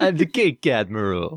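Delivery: put-on Brooklyn accent with a slimy, oily tone. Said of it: "slimy Brooklyn accent".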